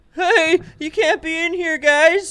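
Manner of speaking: shrill, very high, very loud, annoying shouting voice. Narrating a scene, the speaker voices someone the two listeners overhear; higher-pitched annoying voice. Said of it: "a higher pitched, annoying voice go".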